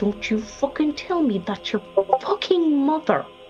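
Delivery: whispered, in a put-on voice. Playing a character who whispers to another character: whispering in character. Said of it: "she's gonna whisper this to him".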